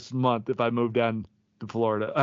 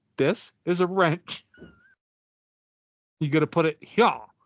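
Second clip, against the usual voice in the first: high, sing-song instructing voice, spelling it out; 5 semitones higher than usual. Imitating the other speaker explaining a wrench: imitating Tony. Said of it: "Tony be like".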